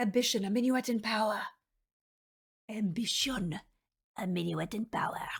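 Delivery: poor, bad put-on French accent. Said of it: "I get to get my bad French accent out".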